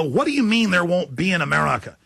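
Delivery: ordinary delivery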